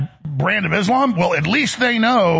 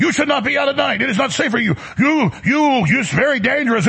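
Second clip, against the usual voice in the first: play-acted high, raised, hectoring yelling; 6 semitones higher than usual. Retelling how a man confronted a woman out alone at night: retelling a man yelling. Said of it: "starts yelling".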